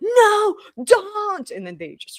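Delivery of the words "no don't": acted-out frantic screaming at a very high pitch. Retelling a car sinking with people inside; retelling a man's scream. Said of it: "this man was screaming like".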